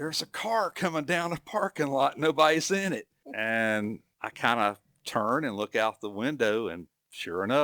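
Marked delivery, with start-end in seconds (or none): 0.0-3.1 sudden, loud, high-pitched holler. Retelling a coworker's warning about a car rolling downhill: imitating someone hollering. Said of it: "all of a sudden hollered".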